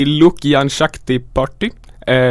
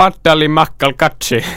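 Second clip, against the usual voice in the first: put-on Finnish-accented pronunciation. Reading a party name from a list aloud, in a Finnish accent. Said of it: "Jag ska uttala med finsk brytning".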